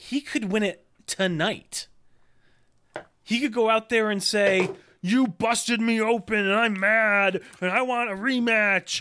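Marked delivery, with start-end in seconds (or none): 5.0-9.0 loud, hyped wrestling promo voice. Imitating a wrestler demanding a rematch: Roman Reigns impression. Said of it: "You have a great Roman Reigns impression".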